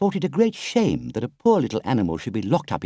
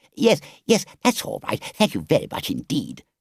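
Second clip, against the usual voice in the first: said hurriedly, in a rush. Reading a story aloud, a toad character cutting in: hurriedly. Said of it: "said the Toad hurriedly".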